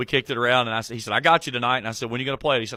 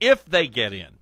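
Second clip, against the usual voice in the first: heavy emphasis placed on the word "if"; 3 dB louder than usual. Commenting on teams getting into the NCAA tournament, stress on if. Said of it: "notice I stress the word if".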